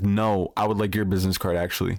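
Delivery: ordinary talk, nothing marked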